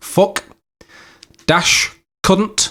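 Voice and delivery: slowly drawn-out imitated words. Retelling how he gave his one password: imitating very slow speech. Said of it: "very slowly".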